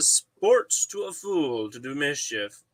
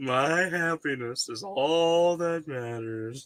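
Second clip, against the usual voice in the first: put-on smug tone. Repeating someone's line to show the tone: imitating a smug tone. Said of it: "that smug tone in his voice".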